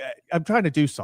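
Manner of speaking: mildly annoyed, irritated, shooing-off dismissive tone. Acting out a player brushing off defenders: imitating annoyed tone. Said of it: "he's literally, like, annoyed with them".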